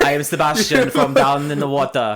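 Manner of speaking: put-on very loud, belted Jamaican accent. Arguing over how to say Ariel, doing Sebastian's Jamaican accent. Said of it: "You're not Jamaican".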